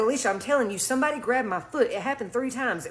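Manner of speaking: normal talking voice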